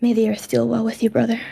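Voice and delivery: whispering in a character voice. Hugging a departing brother in character and tracing a cross, whispering. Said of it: "and I'll whisper".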